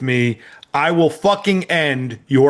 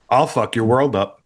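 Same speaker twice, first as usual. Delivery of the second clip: very calm, calmest possible voice; 4 semitones lower than usual. Wanting threats said calmly, the speaker demonstrates one in the calmest voice possible. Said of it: "say it in the calmest voice they can".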